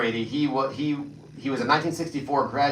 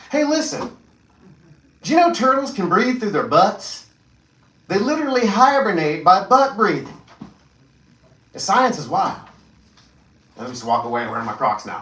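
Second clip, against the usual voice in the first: high, loud voice with swooping pitch; 7 semitones higher, 6 dB louder than usual. Filling in with one-liners: Justin Nunley impersonation. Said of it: "I'll give my best Justin Nunley impersonation".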